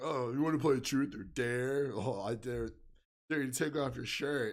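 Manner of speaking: put-on stoned, spaced-out, out-of-it delivery. Retelling what a guy who got in the back said, imitating someone stoned. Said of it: "Because you sound like you're high".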